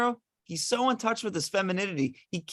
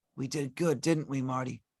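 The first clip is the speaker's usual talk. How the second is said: spoken in a whisper; 6 semitones lower, 5 dB quieter than usual. Narrating the Jack of Diamonds dying in two characters' arms, whispering. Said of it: "and he whispers".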